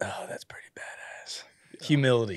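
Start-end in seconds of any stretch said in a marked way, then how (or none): 0.0-1.4 put-on mutter, much quieter. Welcoming a guest, the speaker recalls his intro and is imitating Cheese muttering. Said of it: "you just hear Cheese under his breath".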